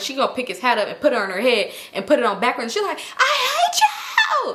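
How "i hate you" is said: very high, screamed outburst. Retelling what a woman said to the man: imitating someone screaming. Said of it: "She just started screaming".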